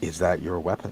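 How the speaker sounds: hushed, low, sidelong half-whisper. In a tabletop game, a character half-whispers to another character: low half-whisper. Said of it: "he just sort of whispers over to Vigrod".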